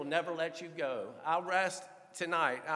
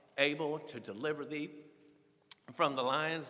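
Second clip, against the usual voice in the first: usual speaking voice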